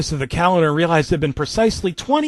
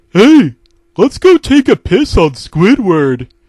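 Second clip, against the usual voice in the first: loud, blaring cartoon sea-creature accent; 4 semitones higher, 10 dB louder than usual. Riffing on a cartoon bit about Squidward, in Patrick Star voice. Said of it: "accent that's like".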